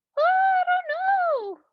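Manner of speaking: very high shout with long, drawn-out "don't". A player in a story game answers a man in the kitchen, shouting back. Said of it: "I shout back".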